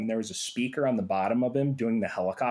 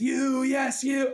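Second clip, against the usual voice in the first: shrill, very high, loud screaming; 13 semitones higher than usual. Recalling a giant figure at The Wall show; imitating a figure screaming at the audience. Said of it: "He's screaming at the audience".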